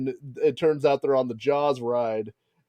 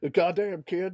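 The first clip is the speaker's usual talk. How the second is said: put-on Texas wrestler voice, pitched higher; 4 semitones higher, 3 dB quieter than usual. Trying a wrestler impersonation after mentioning his part of Texas: Stone Cold impression. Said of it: "it's hard to do Stone Cold".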